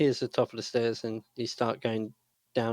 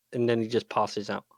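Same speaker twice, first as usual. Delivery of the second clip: ordinary talk, nothing marked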